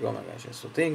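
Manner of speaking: normal talking voice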